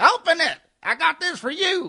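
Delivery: very high, loud, drawn-out heckling holler. Retelling a man in the crowd at a show: imitating a heckler yelling. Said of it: "he's yelling at me from the crowd".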